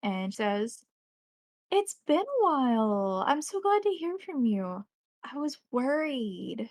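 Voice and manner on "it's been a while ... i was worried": lively, bubbly, pitched-up, swooping voice. A game narrator voices a bartender answering the player's phone call, in a bubbly voice. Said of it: "a bubbly voice that answers".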